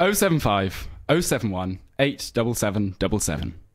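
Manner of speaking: numbers read out one digit at a time. Reading out the number listeners can text, asked to say it: said really slowly. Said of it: "Say the number really slowly".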